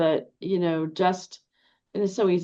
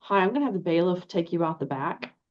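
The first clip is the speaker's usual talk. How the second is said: normal talking voice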